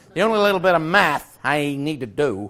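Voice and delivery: faked, put-on American accent. After teasing Americans for saying math: put-on American accent. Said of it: "That was my American accent".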